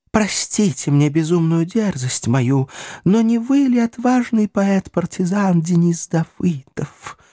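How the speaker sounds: embarrassed, bashful, high-pitched babbling. Reading a young lady's line to the narrator, embarrassed babbling. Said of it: "смущенно пролепетал девица".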